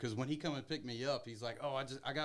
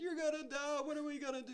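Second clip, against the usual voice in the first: very high, sobbing, tearful crying scream. Retelling a young daughter panicking while a parent sinks in mud: imitating a child screaming and crying. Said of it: "screaming and crying".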